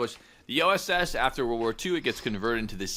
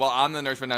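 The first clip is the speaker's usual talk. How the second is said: usual speaking voice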